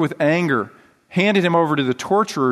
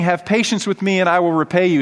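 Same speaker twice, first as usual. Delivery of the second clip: plain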